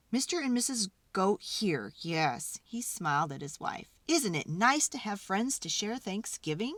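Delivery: ordinary delivery, nothing marked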